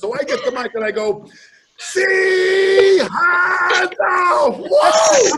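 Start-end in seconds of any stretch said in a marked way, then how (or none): 1.8-5.3 very loud, high-pitched, top-of-the-lungs yell. Retelling shouting into a microphone at a crowd: imitating himself yelling at the top of his lungs. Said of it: "At the top of my lungs".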